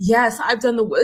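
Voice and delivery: mocking pseudo-therapy, preacher-style voice. Mocking how some people talk about their healing: mocking pseudo-therapy preacher speak. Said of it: "this pseudo therapy preacher type of speak".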